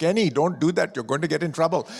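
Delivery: put-on Pakistani accent. Speaker imitates his mother warning him, in a Pakistani accent. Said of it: "her accent goes".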